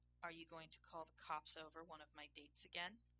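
plain reading voice

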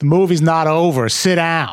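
shrill, high-pitched, acted shouted scream. Recalling screaming at people leaving a movie before it ended; retelling a scream. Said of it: "I screamed at somebody".

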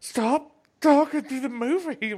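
put-on pissed-off scolding, very high, shrill and loud. Retelling a man at a movie scolding the speaker's noisy group, imitating an angry man. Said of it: "the dude was like all pissed off".

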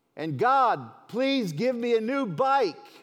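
shrill, far-carrying, loud shout, pitched way up. Telling a joke, a boy praying at bedtime calls out to God: retelling a real loud voice. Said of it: "in a real loud voice".

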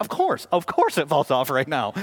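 play-acted sarcastic, swooping sing-song. Retelling the moment a deadbolt fell off in hand: retelling own sarcastic remark. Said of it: "I just sarcastically say".

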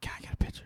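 hushed, barely voiced whisper. Retelling asking an elderly gentleman for a picture: imitating own whisper. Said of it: "I literally whispered".

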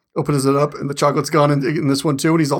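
usual speaking voice

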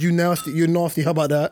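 ordinary delivery

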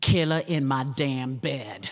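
acted-out cheeky read, dripping with sass. Retelling a voiceover session, asked for sass: imitating a sassy read. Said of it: "give it some sass?".

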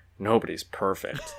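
put-on mumbling, under breath. Retelling a character's unmasking, quote his line in a mock mumble under his breath. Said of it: "mumbles it under his breath".

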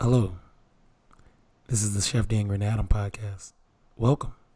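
low, threatening, murderous, menacing tone. Introducing the Chef Dan Green Adam podcast, sounding like going to kill somebody. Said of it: "you sound like you're going to kill somebody".

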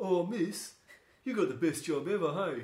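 high, loud put-on teenager voice. Recalling what she said when she turned to her: typical teenage voice. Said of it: "in the typical teenage voice".

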